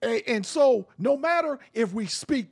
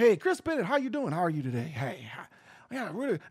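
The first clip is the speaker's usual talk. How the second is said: put-on, low, soft, smooth, buttery voice; 6 semitones lower, 6 dB quieter than usual. Showing the voice he could put on in a suit and tie, buttery voice. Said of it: "I can put that buttery voice on".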